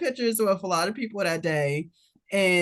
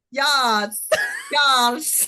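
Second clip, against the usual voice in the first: fake Bulgarian accent, high sing-song, "yes" stretched; 4 semitones higher, 4 dB louder than usual. Recounting chiming in from behind a woman, speaking with a fake accent. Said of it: "with my fake accent".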